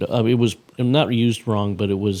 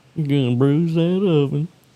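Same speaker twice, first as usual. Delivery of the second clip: put-on Western Texan accent; 6 semitones higher than usual. Describing how something sounded, quoting its line in a western texan accent. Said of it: "a Western accent".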